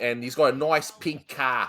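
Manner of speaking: attempted New Jersey accent. Trying out a New Jersey-style accent, which comes out sounding Boston: attempted New Jersey accent. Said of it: "that sounds more Boston".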